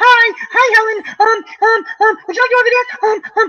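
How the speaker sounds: squeaky high-pitched voice. Recalling hearing their own voice back, the speaker imitates it: high squeaky voice. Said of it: "you're like this high squeaky voice going".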